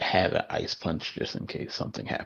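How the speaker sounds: hushed whisper. Speaking in character to a companion while leaving a stage: whispering in character. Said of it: "and whisper".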